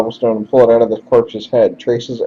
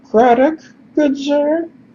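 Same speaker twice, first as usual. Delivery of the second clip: hopeful, high-pitched calling voice. Narrator voicing a resident calling out as you approach, calling out in a high voice. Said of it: "calls out in a high voice".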